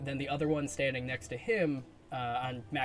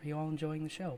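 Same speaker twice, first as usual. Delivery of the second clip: whispered, higher pitch; 3 semitones higher than usual. Narrating a scene, voicing a hooded man standing beside the listeners, whispering. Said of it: "as he whispers and he goes".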